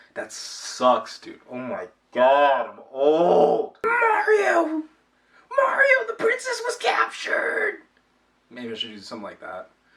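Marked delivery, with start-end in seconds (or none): 3.8-7.7 very high, throat-straining, strained character voice. Trying out a character voice, straining to do the Toad voice. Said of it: "the best way to do the Toad voice".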